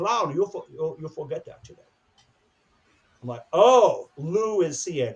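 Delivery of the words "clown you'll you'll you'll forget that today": put-on softly spoken German accent. Recalling being told about his eyeliner, the speaker quotes a man in a german accent. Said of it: "He never lost his German accent".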